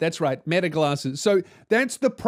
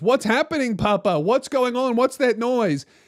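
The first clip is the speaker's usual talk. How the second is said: put-on clueless, confused voice, higher pitch; 7 semitones higher than usual. Retelling a scene, imitating a clueless son. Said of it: "the son is clueless and goes".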